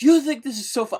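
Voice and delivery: imitated yelling. Retelling a coworker's angry reaction to her saved phone name: imitating someone yelling. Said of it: "yelling at me".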